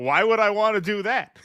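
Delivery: put-on proud voice. Retelling how the guy answered the sex question: imitating someone answering proudly. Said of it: "He says it like".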